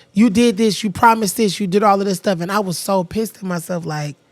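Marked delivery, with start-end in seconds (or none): none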